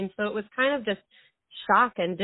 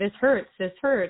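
plain

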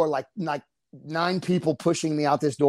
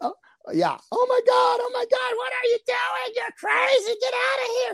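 mock scream, much higher in pitch. Retelling a fight where Paris Hilton screams at the speaker, imitating Paris Hilton screaming. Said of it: "She starts screaming".

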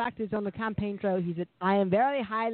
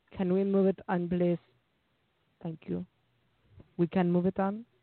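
put-on French girl voice; 2 semitones lower than usual. Speaker imagines what a French girl would say; imitating a French girl. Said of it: "I can almost hear a French girl go".

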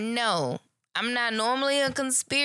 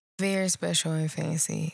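slower, low, lowered voice; 7 semitones lower than usual. Speaker talking about having all her people together, in a low voice. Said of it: "I'll just use my low voice to tell you".

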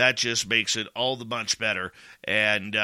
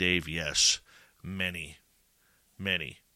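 put-on mock sadness, lower and quieter; 6 semitones lower, 5 dB quieter than usual. Retelling another father's reply about his son, acting out a sad reply.

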